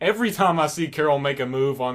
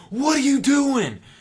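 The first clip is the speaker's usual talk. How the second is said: mock very high, shrill, loud screaming yell; 11 semitones higher, 5 dB louder than usual. Retelling a scene where one character saves another: imitating Rick screaming. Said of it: "he's screaming at him like".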